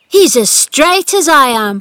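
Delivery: ringing, high, loud cry. Narrator reads Dickon's line as Colin stands before Ben Weatherstaff; cried out. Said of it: "cried Dickon".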